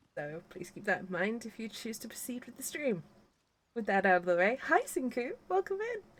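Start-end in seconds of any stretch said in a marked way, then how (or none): 4.7-6.0 voice gone squeaky and very high. Host greeting a viewer at the start of a stream, voice going squeaky. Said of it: "my voice went squeaky then".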